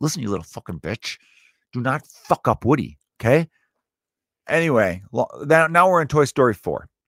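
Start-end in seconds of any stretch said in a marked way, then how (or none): 0.0-3.5 acted, forced out through clenched, gritted teeth. Retelling a man's speech to a girl, said through his teeth. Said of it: "He almost wanted to say it through his teeth".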